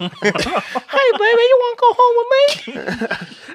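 put-on voice of an eight-year-old. Joking about a skill whose drawback is a childlike voice: voice of an eight-year-old. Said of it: "you had the voice of, like, an eight-year-old".

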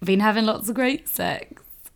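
plain

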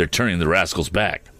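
usual speaking voice

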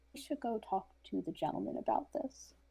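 very low whisper, as low as possible. Pulling a companion aside in a game scene: whispering very low. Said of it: "I just whisper to her as low as I can".

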